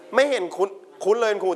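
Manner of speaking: ordinary talk, nothing marked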